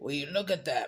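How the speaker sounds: put-on country cowboy accent. Retelling a funny video of a cowboy with a dog: imitating a country accent. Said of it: "he has a country accent".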